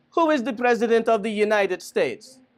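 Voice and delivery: put-on Jamaican accent, slow and high-pitched. Retelling a story, the speaker voices a man asking two kids a question; Jamaican accent. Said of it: "Okay, Jamaican".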